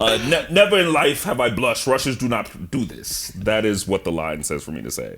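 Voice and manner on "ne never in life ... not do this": loud, put-on Russian accent throughout. Asked for their best Russian accents, reading a line in a put-on Russian accent. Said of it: "Do your best Russian accents".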